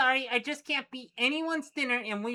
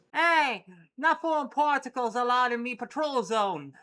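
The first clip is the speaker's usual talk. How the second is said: full-on put-on British accent, patrol-cop style. Narrator voices a globular figure oozing up from the ground, british accent. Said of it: "you gotta be real British".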